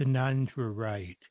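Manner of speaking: soft delivery following a pause. Retelling own answer to an audience question about blindness: imitating own soft voice. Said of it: "in a soft voice".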